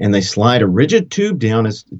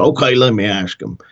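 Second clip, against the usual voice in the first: put-on Texas accent, much slower. Retelling a phone call, the speaker quotes the man on the phone in a texas accent. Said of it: "He's a very Texas accent".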